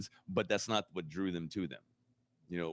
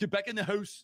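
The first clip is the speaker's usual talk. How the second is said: put-on Canadian accent in very high child voice. Imitating the kids on Are You Afraid of the Dark?, in a Canadian accent. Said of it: "a bunch of kids being like".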